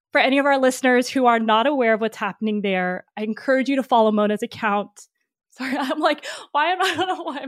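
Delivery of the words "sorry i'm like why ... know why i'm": high, fast laughter through tears. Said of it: "tearing up".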